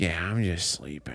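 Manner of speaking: cat voice, dropped low in pitch. Retelling how the cat answers in its own voice: voicing the cat. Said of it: "that's a nice voice for him".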